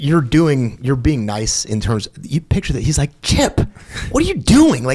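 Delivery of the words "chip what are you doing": mock very high, swooping, fed-up, mad tone. Retelling how an instructor scolded him: imitating someone mad. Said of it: "he's so mad at me".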